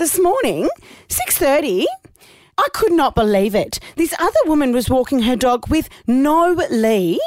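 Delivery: imitated mother's voice. Retelling a phone call from mum about a dog walk, imitating mum's voice. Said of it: "I have to put on my mum's voice".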